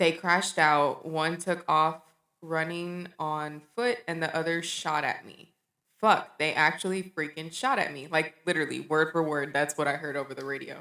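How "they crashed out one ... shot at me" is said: plain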